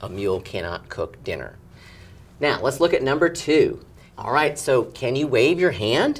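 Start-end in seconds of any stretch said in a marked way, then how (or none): 4.6-6.2 rising pitch lift at the end on "hand". Reading a question aloud to show the ending: pitch rises on hand. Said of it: "See what my voice did at the end with that question mark?".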